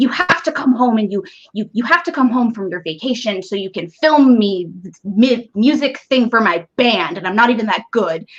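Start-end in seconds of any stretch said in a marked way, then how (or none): 0.0-7.2 play-acted bossy, hectoring, berating yelling rant. Retelling how a boyfriend yelled at his girlfriend over the phone, imitating the yelling. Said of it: "he's yelling at her".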